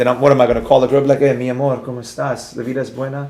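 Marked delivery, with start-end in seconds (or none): 1.2-3.3 hushed, soft put-on romantic sweet-talking voice. Joking about calling a girl after romantic music, in a mock-romantic tone. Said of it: "then I get all romantic".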